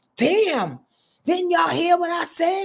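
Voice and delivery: voice breaking out angrily. Speaker shows Ramon how the boy inside can come out: angry voice. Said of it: "it comes out in an angry voice".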